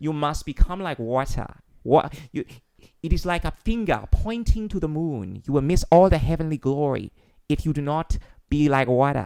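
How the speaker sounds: put-on wise, spiritual-sounding Chinese accent. Asked if he can talk like that all the time, the speaker demonstrates: put-on spiritual Chinese accent. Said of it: "there's certain accents that make you sound more spiritual".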